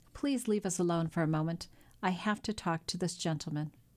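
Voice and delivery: ordinary talk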